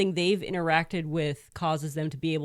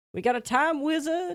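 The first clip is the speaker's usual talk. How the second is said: put-on Brooklyn accent, higher; 10 semitones higher than usual. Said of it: "I was trying my best to do a, uh, was it Brooklyn accent?".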